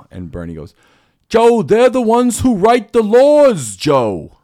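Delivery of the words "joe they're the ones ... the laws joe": very loud, high, slow, drawn-out, swooping belted shout. Retelling Bernie's reply to Rogan: Bernie Sanders impression. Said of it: "That's pretty damn good impression".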